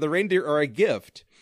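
plain

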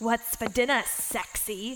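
croaking, croaky goblin voice. Reading a story aloud, the narrator gives the goblin's line in a croaking goblin voice. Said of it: "croaked the goblin".

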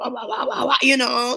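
high, swaggering mock voice with wah-wah.

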